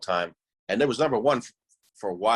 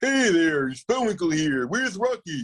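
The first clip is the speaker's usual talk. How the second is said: goofy, silly cartoon moose voice, pitched up high; 9 semitones higher, 4 dB louder than usual. Trying out cartoon voices, Bullwinkle voice. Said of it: "what cartoon voices".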